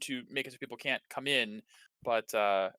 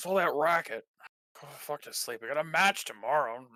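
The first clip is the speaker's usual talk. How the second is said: irritable, complaining grumble; 3 semitones higher than usual. Voicing people across the hall woken by a racket: grumbling. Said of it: "grumbling of people in the room".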